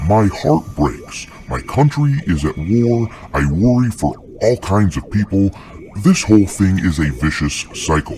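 ordinary talk

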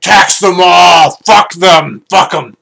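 very loud fat-king voice, talking with mouth full. Eating on video, the speaker imagines a fat king, in a fat king voice. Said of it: "like a fat king that's like chewing on his fucking chicken leg".

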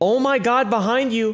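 high, light yelp of alarm. Imagining a buddy yelling a warning at him: retelling a scream. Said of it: "If my buddy is screaming at me".

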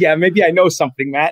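ordinary talk

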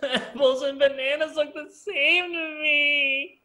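very high fake sobbing wail, "me" drawn out. Narrating a speedrun challenger's failed attempt, imitating someone crying.

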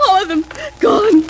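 high, sobbing crying voice. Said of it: "Will you please stop crying".

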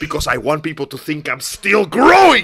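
embarrassed voice with swooping pitch. Retelling an anime scene, answering why he grew: embarrassed Frieza voice. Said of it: "Frieza looks so fucking embarrassed".

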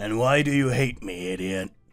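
very loud, growling snarl. Bakugou, behind the listener on the sofa, growling. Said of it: "He growled into your neck".

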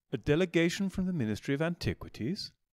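mildly surprised. A butler answers visitors who say they are here for dinner, mild surprise. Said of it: "The butler said with mild surprise".

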